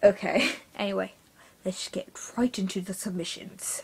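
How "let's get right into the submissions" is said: whispered, breathy, really bad fake British accent. Opening a new series reviewing viewers' stories, starting the submissions; really bad British accent. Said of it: "I have a really bad British accent".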